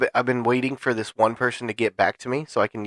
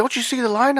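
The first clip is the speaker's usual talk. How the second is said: mock heckling yell, very high-pitched; 13 semitones higher than usual. Retelling being yelled at by people waiting in line: imitating people yelling. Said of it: "People were yelling at me".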